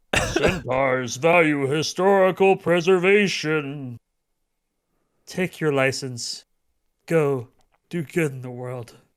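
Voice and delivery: spectral ghost voice. Reading a story aloud, the narrator voices a ghost: booming ghost voice. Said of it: "A ghost voice boomed".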